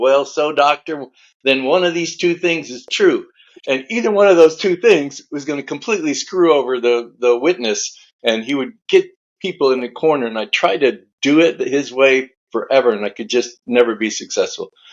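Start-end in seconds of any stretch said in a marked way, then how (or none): 0.0-3.3 slow, drawn-out southern lawyer drawl. Retelling how a lawyer cornered experts in depositions: imitating a lawyer's southern drawl. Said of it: "in his southern drawl".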